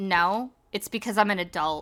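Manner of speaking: put-on flat, deadpan delivery. Retelling what a date said in answer to a question, imitating a deadpan reply. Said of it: "really like deadpan".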